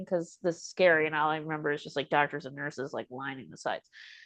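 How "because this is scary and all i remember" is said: plain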